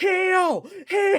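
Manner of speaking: high, loud screaming. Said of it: "would literally just scream at him".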